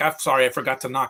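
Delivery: ordinary delivery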